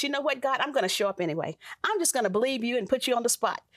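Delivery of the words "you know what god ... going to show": plain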